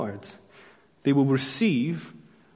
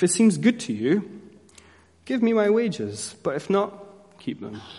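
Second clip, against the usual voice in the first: pointedly sarcastic, pitched-up tone; 6 semitones higher than usual. Retelling the prophet's words to the people: retelling a line sarcastically. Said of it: "quite sarcastically".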